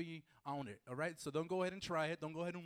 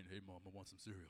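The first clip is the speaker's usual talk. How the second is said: very deep, soft, low, hushed groggy voice; 11 semitones lower, 14 dB quieter than usual. Showing how Leo sounds in the morning: deep voice imitating Leo. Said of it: "That's Leo in the morning".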